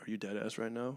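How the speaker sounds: very quiet, dropped-tone, hushed scolding voice. Describing when a mom is scariest: imitating a mom lowering her tone. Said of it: "when your mom lowers her tone and she's like".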